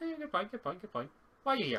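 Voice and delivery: high, put-on Scottish fairy voice. Answering someone who says a wolf attacked them, in a scottish pixie voice. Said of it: "She's also a Scottish pixie".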